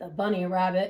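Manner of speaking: usual speaking voice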